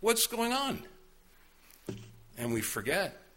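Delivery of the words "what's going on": high, indignant protesting tone. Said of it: "we go".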